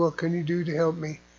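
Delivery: ordinary delivery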